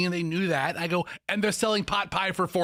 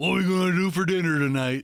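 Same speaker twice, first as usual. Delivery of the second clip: put-on voice, mocking; 3 dB louder than usual. Acting out the question asked at home about dinner, in a put-on voice. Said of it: "Who sounds like that?".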